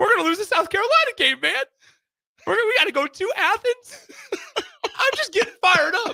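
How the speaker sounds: put-on very high, tearful, sobbing blubbering. Reenacting a radio caller who cried over football, mock sobbing caller. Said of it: "I'm gonna try to reenact it".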